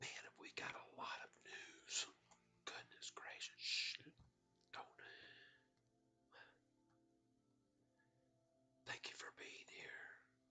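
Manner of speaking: speaking in a whisper. Greeting viewers early in the morning while keeping quiet: whispering. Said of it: "I'm gonna whisper over here".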